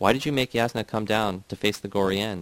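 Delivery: ordinary delivery, nothing marked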